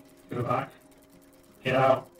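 extremely distorted mechanical, robotic machine voice. Narrator voices the mechanical man standing at the door, extremely distorted mechanical voice. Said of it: "An extremely distorted voice comes out of the mechanical man".

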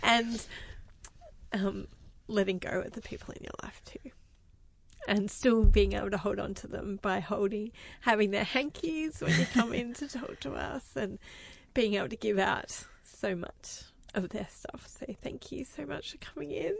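speaking while crying, through tears. Thanking a guest for coming in, the speaker talks while crying. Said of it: "and I can't stop crying".

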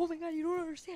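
put-on near-tears, giddy, frantic, overexcited gush. Retelling hearing the talking Mickey while waiting in line: reenacting frantic excitement. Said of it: "I'm going to cry".

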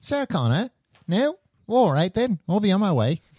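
put-on English accent. Joking about the Terminator using an English accent: English accent. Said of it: "an English accent".

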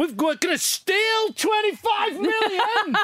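very high, rising, top-of-the-voice blurted shout. Recounting a movie scene's dialogue, imitating a loud shout. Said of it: "at the top of their voices".

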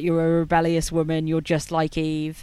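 plain

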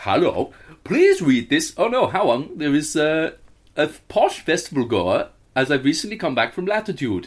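put-on sing-song Swedish-accented English. Asked what accent to read a letter in, the speaker tries a Swedish accent.

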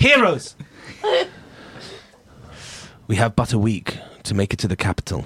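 put-on serious character voice. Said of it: "She says".

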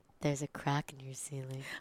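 very low, very soft, hushed porn-star delivery. Imitating how Aiden talks when rewatching the show: Aiden talking like a porn star. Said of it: "he talks like a fucking porn star".

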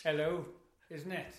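attempted Welsh accent. Asked for something really Welsh, the speaker answers in a Welsh accent. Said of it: "Is that pretty good Welsh?".

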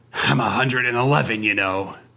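hissed, hissing voice. Narrator reading a story; on a train, a man answers a frowning lady, hissed. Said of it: "he bared his remaining teeth and hissed".

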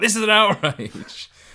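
put-on livid indignation, very loud and high-pitched. Retelling a friend's angry tweet to an airline: imitating a furious tweet. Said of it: "he was livid".

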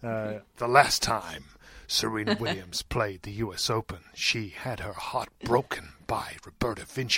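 movie trailer voiceover narration voice. On a tennis podcast, asked to announce like a movie trailer, in a movie trailer voiceover voice. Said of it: "Do my voiceover voice".

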